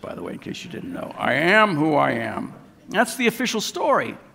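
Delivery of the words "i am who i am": very slow, creaky, rough-edged, drawn-out delivery. Retelling the Moses story, repeating God's reply, in a God voice. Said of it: "That's my God voice".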